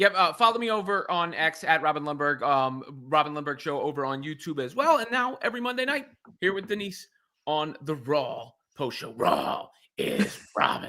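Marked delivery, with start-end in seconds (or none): 9.1-10.9 rough, gravelly promoter voice. Plugging the Raw post show he co-hosts, he says its tagline in a Vince McMahon voice. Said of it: "I got to do the Vince voice".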